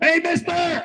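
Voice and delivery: put-on very high girl's voice, called out. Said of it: "I heard her yell".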